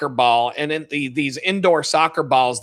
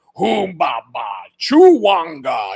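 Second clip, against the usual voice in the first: garbled alien-language shout, pitched up, pitch swinging wildly; 5 semitones higher, 3 dB louder than usual. Describing someone guarding the ball on the court, imitating Jabba the Hutt yelling. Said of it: "Like just yell it".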